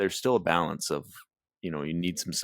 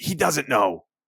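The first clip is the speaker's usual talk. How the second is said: full-throated, high, loud yell; 9 semitones higher, 7 dB louder than usual. Retelling what a girl in the audience yelled during a movie: imitating someone yelling. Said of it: "She would yell".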